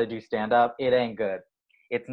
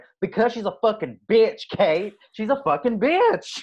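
put-on Southern accent, pitched very high; 10 semitones higher, 4 dB louder than usual. Retelling the funniest moment, when one person turned to another before an audience, in a southern accent. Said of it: "go in a Southern accent going".

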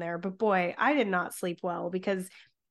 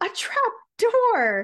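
excited yell, thrilled, swooping and drawn out; 14 semitones higher, 8 dB louder than usual. Recounting how someone yelled on finding a trap door: retelling an excited yell. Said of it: "in excitement, yells out".

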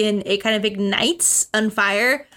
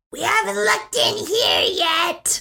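put-on high, swooping goblin creature voice; 8 semitones higher than usual. A game master voices a call echoing from far off, in goblin voice. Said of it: "from a goblin voice".

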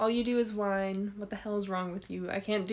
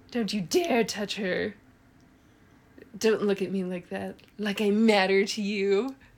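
very sarcastic mock-dramatic delivery, louder; 5 dB louder than usual. Reading dramatic dialogue prompts aloud to another speaker: super sarcastic reading. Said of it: "saying all of these with, like, a super sarcastic".

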